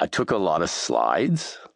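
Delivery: rising upspeak tune ending on slides. Quoting a geeky high school friend's answer to the speaker, imitating Patrick's upspeak. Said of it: "talked this way".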